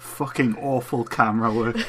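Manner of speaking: plain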